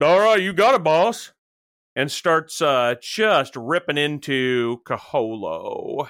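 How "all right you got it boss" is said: eager devil servant voice, fast and high-pitched. Game master voices the contractor devil answering its commander, in the contractor devil's voice. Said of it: "And the contractor devil's like".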